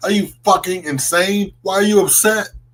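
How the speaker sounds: play-acted high, yelled ranting outburst. Retelling what gets said to the tv: imitating own yelling. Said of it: "I always yell at the computer or the T V".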